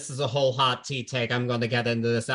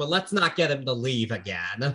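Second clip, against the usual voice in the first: ordinary talk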